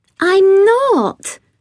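protesting, very high-pitched. Narrator reads Beth answering after Caddy calls her perfect, protesting. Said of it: "protested Beth".

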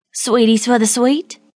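rough, gravelly voice, calling out. Narrator reading a stranger in a crowd calling out to her: gravelly tone. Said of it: "called out in a gravelly tone".

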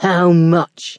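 growled, growling voice. He turns his gaze back to Jo and asks, growled. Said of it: "he growled".

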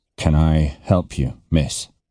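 deep gentleman's voice. A man addresses a young woman aboard; deep gentleman's voice. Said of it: "in the deep voice of a gentleman".

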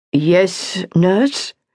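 almost weary, somewhat tired. Reading a lecturer's reply to a nurse, almost wearily. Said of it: "The lecturer said almost wearily".

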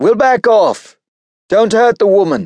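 very high-pitched, loud shouting yell. Nicholas calls out to Esposito, who holds a woman hostage, shouting. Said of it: "Nicholas shouted".

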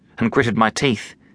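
ordinary delivery

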